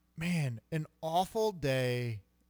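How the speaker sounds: slow, choked-up voice catching in the throat.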